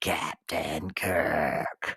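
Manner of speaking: very low, rasping, hushed creature voice. Remembering the creature from a first encounter calling out, in a raspy Gorn voice. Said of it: "I can still hear his raspy voice calling out".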